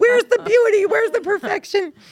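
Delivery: high, loud exasperated wail. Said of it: "And you're just like".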